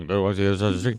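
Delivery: fast, mumbled delivery. Quoting what he just said, deliver it as a mumbling Zaslow impression. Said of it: "Not a bad Zaslow mumbling impersonation".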